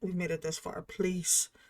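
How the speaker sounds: whispering to oneself. Using a last healing light on an ally in the game: whispering to oneself. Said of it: "whispering to myself".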